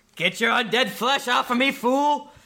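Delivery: high yelling in character voice. Voicing a character swarmed by zombies in a game: in-character yell. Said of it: "he yells".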